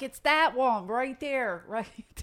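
acted called-out yell. Retelling shouting from an apartment window to people picking up the car; retelling own yelling. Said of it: "So I'm yelling".

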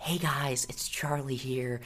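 put-on quiet little girl voice. Imitating how a TikTok dancer talks in her vlogs: Charli D'Amelio impression. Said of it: "it's just like".

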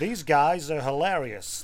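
put-on speaking with American accent. Speaker tries an American accent to make it more genuine, American accent. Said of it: "I'll try to do an American accent to make it, you know, more genuine".

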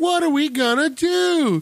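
put-on very high-pitched whiny girl voice. Discussing annoying movie kids, mimicking the girl character: whiny girl voice. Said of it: "the whiny chick voice".

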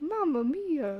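put-on Italian accent. Following a prompt to say the line in a Mario voice. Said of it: "just sound like Mario into it".

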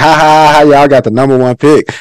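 taunting, jeering mocking ha ha ha laugh. Retelling how his cousin Raymond laughed at him: imitating Raymond's mocking laugh. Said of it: "He laughed at me like".

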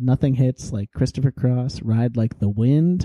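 plain

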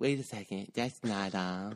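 announcer-like host voice. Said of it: "This is my [name] impression".

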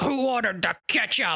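scary, intimidating, menacing tone. Retelling a story of a hot dog stand owner: imitating a scary hot dog vendor. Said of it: "really scary".

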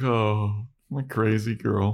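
acted sorrowful, very slow, lingering and drawn out. Retelling a TV scene where Willow looks sad: imitating Willow sounding sad. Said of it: "Willow just looks sad".

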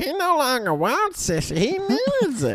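jealous dolphin voice, very high, slow squeal.

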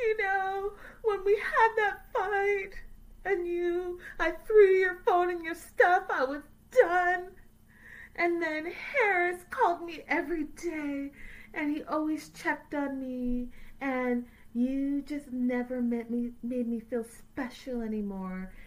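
high, whining, complaining voice. Retelling a woman complaining to a man lying there deadpan: imitating her whining. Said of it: "She's whining and it's like".

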